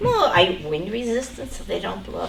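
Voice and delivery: ordinary talk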